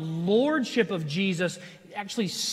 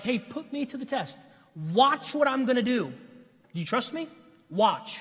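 daring, sarcastic delivery; 4 semitones higher than usual. Reading God's invitation to be tested from Malachi: sarcastic God voice. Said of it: "Or maybe even more sarcastic".

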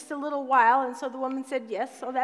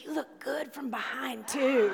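hushed stage whisper, murmured close in; 3 dB quieter than usual. Telling a joke, voicing Satan tempting the wife: half-whispering as Satan. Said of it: "he whispered".

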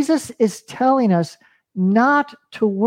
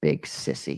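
barely voiced whispered aside, muttered under the breath; 12 dB quieter than usual. Telling a story, speaker voices a little boy as his mother leaves: retelling words under his breath. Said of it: "say under his breath".

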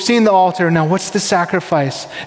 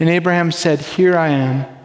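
usual speaking voice

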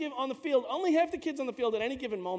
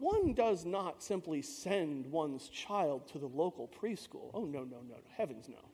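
very low, soft, upper-class snobbish voice; 9 semitones lower, 9 dB quieter than usual. Describing wealthy Manhattan families choosing preschools, doing mock well-to-do snobbery. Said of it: "if you're a well-to-do family".

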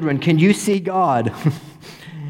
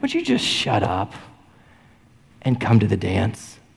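very gentle, tenderest possible voice; 7 semitones lower than usual. Acting out an invitation to people with objections: imitating Jesus, tenderest voice. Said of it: "in the tenderest, only way Jesus can say".

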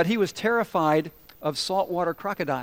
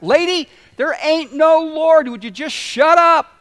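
furious, very loud, high, shrill angry shout; 10 semitones higher, 10 dB louder than usual. Retelling the unbelieving neighbor shouting back at the praying woman, imitating an angry shout back. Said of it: "he would shout back".

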